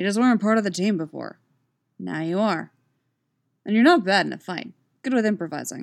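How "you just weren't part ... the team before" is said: ordinary delivery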